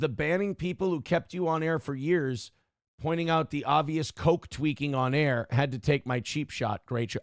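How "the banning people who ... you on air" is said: usual speaking voice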